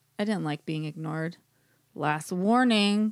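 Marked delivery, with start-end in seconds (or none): 1.9-3.1 growled, growling voice. Reading a listener's story aloud, the narrator warning intruders: growled line.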